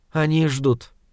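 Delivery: ordinary delivery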